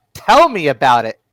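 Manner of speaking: very loud, abrupt, sudden shouted outburst. The game master voices a secretary waking up as the players leave: sudden shout. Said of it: "just suddenly shouts out".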